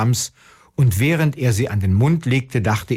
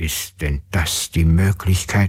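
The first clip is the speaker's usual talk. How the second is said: grumbling mutter, much lower pitch; 7 semitones lower than usual. A father, after the eggs in the cart did not break, grumbling into his beard. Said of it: "Da brummte der Vater in seinen Bart".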